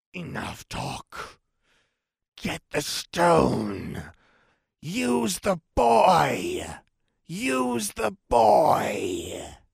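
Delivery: rasping sibilant hiss. Narrating a story as a voice echoes around the room: rasping, sibilant voice. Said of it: "a rasping, sibilant voice".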